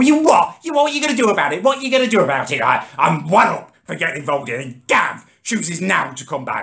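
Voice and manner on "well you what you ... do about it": play-acted, very high, furious screeching. Retelling how a man bounced up and confronted him: imitating someone screeching. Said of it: "He's just screeching at me".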